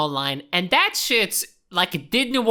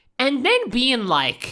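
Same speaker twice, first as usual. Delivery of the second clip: usual speaking voice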